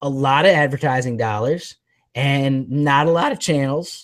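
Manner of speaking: voice breaking and cracking mid-sentence. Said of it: "Did my voice just crack".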